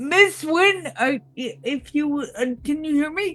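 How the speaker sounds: shouting. Playing a character calling out to a distant person: yelling in character. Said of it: "I'm going to yell".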